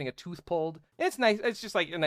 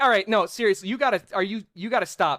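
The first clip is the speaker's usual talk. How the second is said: upset, earnest, flustered pleading; 3 semitones higher, 4 dB louder than usual. Retelling a character asking a girl to stop: imitating a plea to stop. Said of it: "he is pleading with her to stop".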